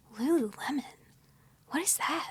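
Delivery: soft, puzzled whisper. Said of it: "And you're like".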